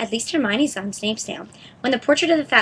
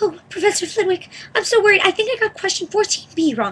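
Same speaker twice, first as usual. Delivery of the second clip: very high, silly put-on falsetto voice; 9 semitones higher, 3 dB louder than usual. Ron suggests Hermione pretend to wait for a professor, in a put-on high voice. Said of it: "He put on a high voice".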